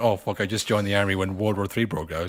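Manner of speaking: ordinary delivery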